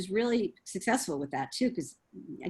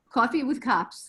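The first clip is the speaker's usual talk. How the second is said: Rhode Island accent on the word coffee; 4 semitones higher, 4 dB louder than usual. Saying the phrase once more on request: Rhode Island accent. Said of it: "I have the accent".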